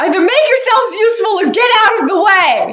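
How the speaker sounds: shrill, very high yelling. Voicing a ship captain yelling down at hesitating crew: yelling as Captain Leftrin. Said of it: "she yells down at you".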